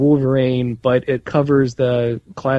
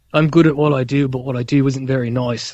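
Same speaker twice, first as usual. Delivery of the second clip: put-on Australian accent. Saying the line he expected a man in a film to say, Aussie accent. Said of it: "That was a pretty good Aussie accent".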